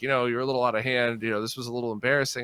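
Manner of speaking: plain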